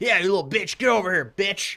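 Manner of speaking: mock, really aggressive, taunting bully voice. Retelling a man on the street at three am: imitating an aggressive man. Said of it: "he was real aggressive".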